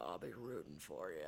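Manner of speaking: very deep, very quiet, hushed voice. Retelling a line from a movie trailer: deep Michael Wincott voice. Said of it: "And in his deep voice, he goes".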